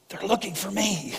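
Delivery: put-on whispering like a little boy. Retelling a joke where a little boy answers the phone: imitating a whispering little boy. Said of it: "the little boy was kinda whispering".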